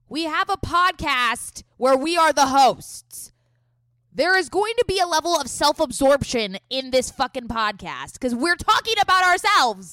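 pitch shooting up, very loud. Making a point to a co-host about the podcast: loud. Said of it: "you got really loud there".

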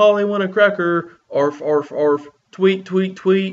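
mock, very high, loud, bird-noise yelling. Quoting Ed from the first episode covered on the podcast: retelling Ed's yell. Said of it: "he yells".

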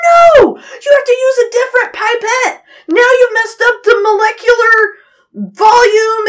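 very high, shrill, frantic freak-out. Retelling how he reacted to her using the same pipette, imitating someone freaking out. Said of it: "freaking out that I just messed up".

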